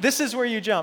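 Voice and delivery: plain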